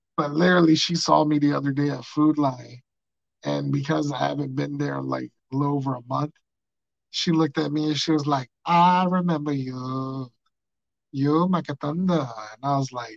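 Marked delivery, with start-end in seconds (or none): 8.7-12.3 slow put-on Vietnamese accent, you stretched out. Retelling a woman who recognized the speaker at Food Lion, in a put-on Vietnamese accent. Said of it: "In her Vietnamese accent".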